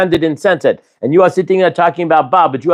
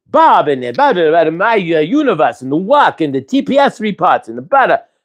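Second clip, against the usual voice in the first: usual speaking voice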